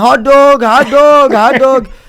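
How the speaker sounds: very loud, very slow, put-on Indian accent. Retelling a disguise as a street vendor calling out: imitating an Indian accent. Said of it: "But you sound Indian now".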